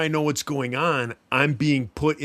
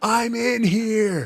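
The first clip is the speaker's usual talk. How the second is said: put-on screaming at top of lungs, higher pitch; 8 semitones higher than usual. Retelling pounding on the bunk ceiling in a dream: retelling a scream. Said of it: "I'm screaming at the top of my lungs".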